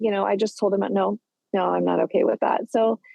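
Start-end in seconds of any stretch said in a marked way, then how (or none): none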